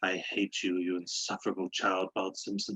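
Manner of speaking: villainous cartoon voice. Imagining a footballer talking like Kelsey Grammer: Kelsey Grammer as Sideshow Bob. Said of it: "start talking like Kelsey Grammer and just be like".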